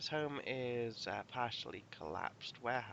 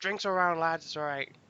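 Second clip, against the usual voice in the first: very loud, booming, high-pitched shout; 6 semitones higher, 13 dB louder than usual. Voicing a character who has just taken the money: shouting. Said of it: "And he shouts".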